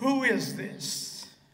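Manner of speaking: loud, nasty, mean voice. The speaker retells grabbing the phone from his wife, retelling in a mean voice. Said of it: "And with a mean voice".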